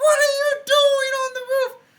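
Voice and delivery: very high shrieking, screaming voice. Retelling how the mother came out at the roof trick: imitating mom screaming. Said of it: "she comes out screaming".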